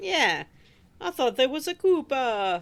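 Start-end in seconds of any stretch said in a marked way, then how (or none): 1.0-2.6 really bad, clumsy cartoon character voice. Joking with the group about landing on enemies: terrible Mario impression. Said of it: "That was a really terrible Mario impression".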